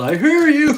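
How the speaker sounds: very high, loud, shouted yell. Retelling calling out to a spouse at home: retelling own past yell. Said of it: "I yelled".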